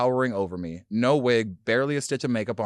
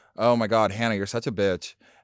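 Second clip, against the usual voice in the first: imitated monotone, deadpan voice. Retelling how the mother greeted friends: imitating mom's monotone voice. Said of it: "because she was so monotone".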